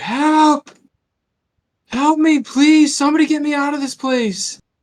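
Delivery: shrill, very high, frightened, panicked scream. Game master voices an unseen person calling out: panicked scream. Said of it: "in kind of like a, a panicked scream".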